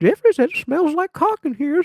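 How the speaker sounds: high-pitched mock grandma voice.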